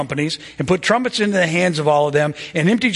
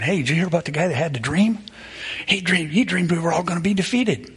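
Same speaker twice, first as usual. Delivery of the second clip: secretive, hushed, gossipy stage whisper; 4 dB quieter than usual. Retelling soldiers in the camp spreading a rumor about a dream: imitating a half-whisper. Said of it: "they were kind of whispering".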